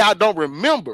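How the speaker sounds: usual speaking voice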